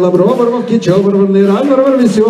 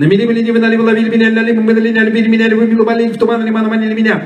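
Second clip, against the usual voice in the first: rapid-fire, very fast, much higher pitch; 3 semitones higher than usual. Repeating a Russian tongue twister, now saying it really fast. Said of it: "now I'm going to say it really fast".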